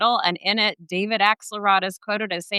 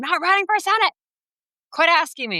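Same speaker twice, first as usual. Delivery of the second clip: mock furious, fed-up, high, angry outburst; 8 semitones higher than usual. Retelling a governor's outburst at the press: imitating Steve Bullock getting mad. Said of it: "got really mad at a room of the press and said".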